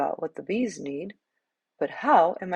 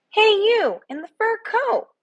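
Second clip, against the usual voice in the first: tiny bee voice, very high, loud and big; 5 dB louder than usual. A very small bee calls out to discouraged Benedict in a remarkably loud small bee voice. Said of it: "a very small bee with a remarkably loud voice".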